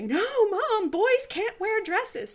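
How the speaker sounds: mock, shrill, very high, drawn-out child's scream. Retelling a five-year-old screaming at the speaker: imitating a child screaming. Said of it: "screaming at me".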